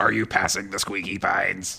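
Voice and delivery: guttural, from-the-throat beast voice. Retelling a legend where a hairy creature asks a question: imitating a guttural creature voice. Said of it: "in a guttural voice asks".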